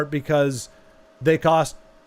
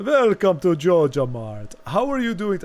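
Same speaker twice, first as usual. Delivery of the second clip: attempted vampire voice that comes out Jamaican-sounding; 2 semitones higher than usual. Voicing a shop character, trying for a Dracula voice. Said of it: "I was trying to go for, like, a Dracula, and I think it came out Jamaican".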